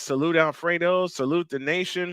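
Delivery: ordinary talk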